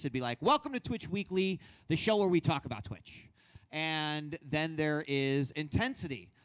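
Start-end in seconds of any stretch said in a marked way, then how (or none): 0.4-3.3 lively, eager, excited, pitched-up and quick. Demonstrating delivery styles, the speaker reads a show's welcome line: excited. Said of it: "If I'm going to be excited".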